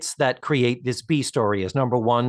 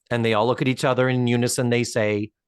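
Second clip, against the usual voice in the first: ordinary talk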